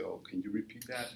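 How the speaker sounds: plain reading voice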